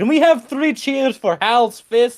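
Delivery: slow, high-pitched calling out. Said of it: "Boris is, like, gonna, like, speak over the crowd".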